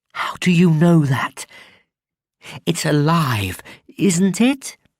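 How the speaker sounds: furious whisper. Reading a story aloud, a character leans over a fence: angry whisper. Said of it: "spoke in an angry whisper".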